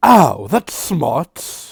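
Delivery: very loud, swooping, decidedly un-squirrel-like voice. Voicing a squirrel that hit a wall: very non-squirrely voice. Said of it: "in a very non-squirrely voice go".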